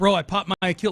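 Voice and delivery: acted-out fear, scared, fearful exclamation. Retelling an injured linebacker's words after tearing his Achilles: imitating scared voice. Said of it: "you can hear the fear in his voice".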